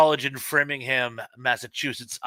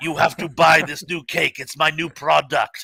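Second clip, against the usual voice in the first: very gravelly voice, louder; 3 dB louder than usual. Acting out Mister Carvel pitching his new cake, gravelly Mister Carvel voice. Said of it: "Mister Carvel had this very gravelly voice".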